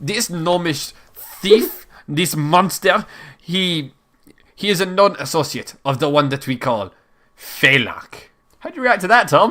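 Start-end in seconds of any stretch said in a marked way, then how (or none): 0.0-8.3 slow, fake European accent with unrolled R. Reading a gnomish rogue's description aloud, in a put-on European accent. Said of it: "in a European accent without rolling the R".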